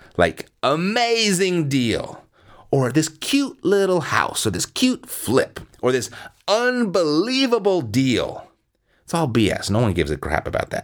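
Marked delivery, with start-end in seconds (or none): 0.6-8.5 high, slow salesy hype with stretched words.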